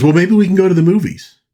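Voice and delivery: keen, high-pitched chirp.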